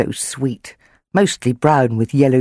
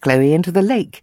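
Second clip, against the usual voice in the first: plain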